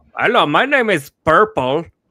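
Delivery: loud, slow, put-on Indian accent. Retelling transferred calls with fake English names: imitating an Indian accent. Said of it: "an Indian sounding person".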